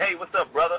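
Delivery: mock, insincere, jokey, sarcastic tone. Retelling how friends greet him, imitating a sarcastic greeting. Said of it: "they'll tend to play about it and be sarcastic".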